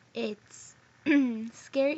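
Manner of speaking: cracked, breaking voice. Giving advice about long distance relationships, voice cracking. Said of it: "Oh my god, my voice cracked".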